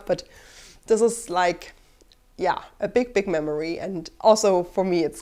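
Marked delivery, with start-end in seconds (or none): 0.1-3.8 teary, tearing-up voice, on the edge of tears. Remembering how Splatoon helped while living alone, teary. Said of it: "I'm getting teary and I'm tearing up".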